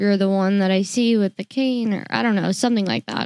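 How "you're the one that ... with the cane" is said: plain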